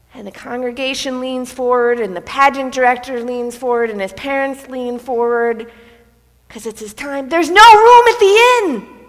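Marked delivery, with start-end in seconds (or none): 7.3-8.8 loud, booming, resounding, very high-pitched call. Retelling Tim's big moment in the pageant as everyone leans forward, booming voice. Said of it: "he says in a booming voice".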